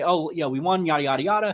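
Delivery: smug, self-satisfied, gloating crowing. Acting out how someone might brag about winning: mock gloating. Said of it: "to gloat and say".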